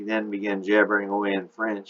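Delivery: ordinary delivery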